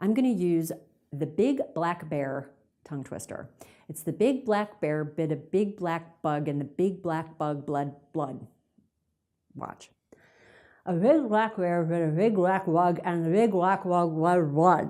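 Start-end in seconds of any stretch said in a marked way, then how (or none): 10.9-14.9 muffled speech with cork between teeth, louder. Showing the cork exercise on a tongue twister: speaking with a cork in mouth. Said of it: "put it in your mouth as you say a".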